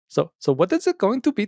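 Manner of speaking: put-on clumsy Indian accent. Quoting a man from his story, in an attempted Indian accent. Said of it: "I got to work on the Indian accent".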